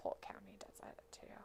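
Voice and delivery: quiet whisper.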